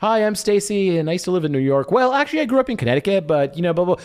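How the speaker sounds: high, rambling delivery. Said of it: "So someone starts saying".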